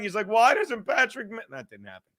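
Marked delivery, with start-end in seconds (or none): 0.3-1.4 mock crying voice. Imitating a friend calling up upset: imitating Ken crying. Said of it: "Ken called me up crying".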